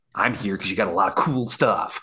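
venomous, disdainful, contempt dripping from every word. Acting out how a movie line would sound around Last Crusade, mock venomous disdain. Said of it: "he's saying that with so much more venom, so much more disdain for them".

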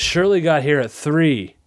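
annoyed, put-out voice kept in set cadence. Recalling Abed's line from an earlier episode: imitating Abed's annoyed voice. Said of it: "the exact same cadence he used".

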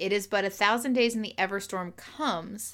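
plain

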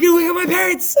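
exasperated, high, loud yell through laughter.

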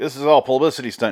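ordinary talk

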